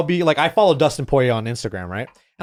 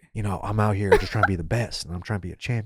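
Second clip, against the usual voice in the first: put-on sexy cool guy voice, lower and quieter; 8 semitones lower, 8 dB quieter than usual. Imitating Kamaru Usman talking to Joe: Kamaru Usman sexy cool guy voice. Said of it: "the sexy, cool guy voice".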